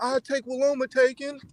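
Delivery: high-pitched, screaming yell at the top of lungs. Complaining about a boxer's demand, imitating Devin Haney screaming. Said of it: "screaming at the top of your lungs".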